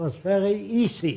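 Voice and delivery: put-on heavy German accent, laid on thick. Recalling asking Ernst Udet how he shot down seventy airplanes, in heavy German accent. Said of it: "He said in a heavy German accent".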